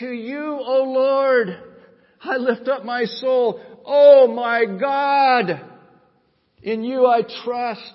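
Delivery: high, loud, intensely emotional impassioned delivery. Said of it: "Listen to David in Psalm twenty-five".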